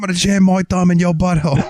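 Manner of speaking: put-on Australian accent. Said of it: "And he's like".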